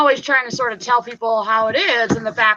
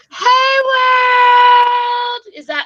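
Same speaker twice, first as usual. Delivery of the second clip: put-on cute voice, much higher and louder; 11 semitones higher, 5 dB louder than usual. Showing how Joy does her greeting, imitating Joy's voice. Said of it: "That's my best Joy voice".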